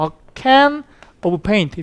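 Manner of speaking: can and paint struck hard, rising. Teaching English content-word stress, stress on can and paint. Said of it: "중요한 건 세게 때려줘. 어가 아니라 can, of가 아니라 paint 이렇게 때려주는데 제가 보여드리면 이렇게 되죠".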